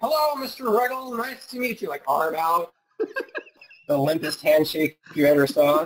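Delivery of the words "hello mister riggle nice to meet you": most flamboyant voice imaginable, over-the-top, pitched up. Retelling greeting a man he was introduced to, in the most flamboyant voice ever. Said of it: "in my most flamboyant voice ever".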